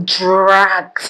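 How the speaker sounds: the word "dragged" stretched out. Telling how a video drew comments online, stretching out the word dragged. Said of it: "Did you see how I stretched that drag?".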